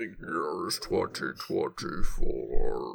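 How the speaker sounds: very low, creaky, rough, dark voice. Jokingly announcing the year during a time-loop bit, in a Prince of Darkness voice. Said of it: "I just turned into the Prince of Darkness voice".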